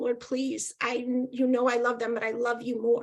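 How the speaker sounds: put-on tearful crying. Telling her story, she acts out praying while rocking her kids, retelling a tearful prayer.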